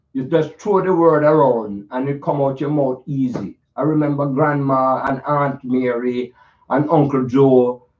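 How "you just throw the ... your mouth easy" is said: loose, easy Jamaican accent. Showing how people in Jamaica talk, demonstrating in a Jamaican accent. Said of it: "demonstrate how the people talk... We kind of talk like this".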